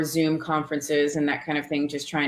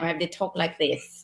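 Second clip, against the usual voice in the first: heavy Cockney accent, spoken quieter; 6 dB quieter than usual. Speaker recalls the accent needed for a Jack the Ripper episode: heavy Cockney accent. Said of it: "I had to have a heavy Cockney accent".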